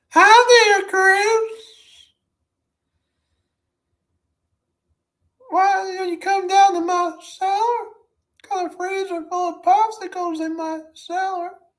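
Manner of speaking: very high, loud, silly cartoon character voice. Showing one of several characters the speaker can do: put-on character voice. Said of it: "I can do a couple of characters off it, like uh".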